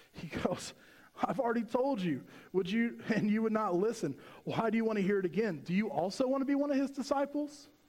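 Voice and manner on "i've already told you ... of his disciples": mock sarcastic, fed-up tone. Retelling a story where a man is asked the same questions again: acting out a sarcastic reply. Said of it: "the guy gets kind of sarcastic with it".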